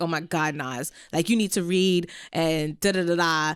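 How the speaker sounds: slow, taunting mockery with laughter. Retelling a voice note someone sent, imitating someone laughing mockingly. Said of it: "he sent a voice note laughing at me like".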